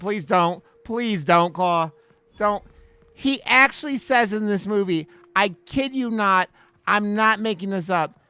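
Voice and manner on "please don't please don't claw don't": begging, louder. Urging a listener named Claw not to watch a movie: pleading. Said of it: "I'm pleading with you".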